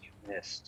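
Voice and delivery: very quiet, close whisper right in the ear. Voicing a familiar voice that whispers in the player's ear: whisper in the ear. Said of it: "a whisper in your ear in a very familiar voice".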